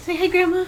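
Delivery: high, coaxing sing-song.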